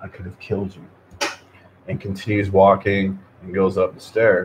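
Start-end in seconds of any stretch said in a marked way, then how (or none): 0.0-1.3 very quiet, breathy, barely audible whisper. Retelling how a guy with a shotgun whispered to a person: imitating a whisper. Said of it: "he whispers to the person".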